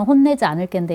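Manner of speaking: ordinary talk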